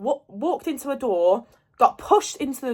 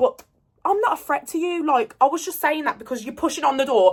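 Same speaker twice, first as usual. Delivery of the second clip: ordinary talk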